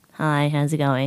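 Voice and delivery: ordinary talk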